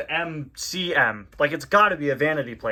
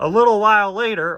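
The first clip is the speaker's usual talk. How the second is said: loud, high-pitched cartoon character voice; 5 semitones higher, 7 dB louder than usual. Reading a comic aloud, narration slipping into the Mater voice. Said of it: "why did I do that in the Mater voice?".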